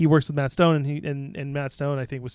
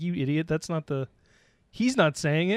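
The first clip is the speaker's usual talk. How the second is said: ordinary talk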